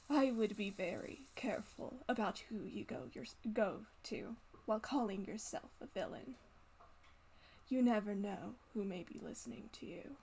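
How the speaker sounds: voice brought down, low, hushed and confiding. Narrating a character who gathers himself and wipes a tear, in a lowered voice. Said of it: "he kind of lowers his voice and says".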